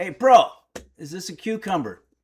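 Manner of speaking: put-on, loud, rude blurt with no manners. Recalling being rude instead of polite, imitating being rude. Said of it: "was very rude".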